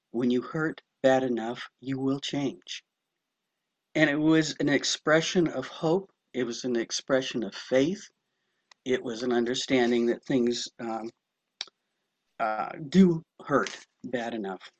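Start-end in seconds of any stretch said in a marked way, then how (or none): 0.1-2.8 hushed, soft, gentle-volume delivery. Retelling what a sponsor used to say: imitating a quiet voice. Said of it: "she'd quietly say".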